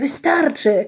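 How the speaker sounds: calling out. He tries to stop the spinning windmill mechanism; calling out. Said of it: "zawołał".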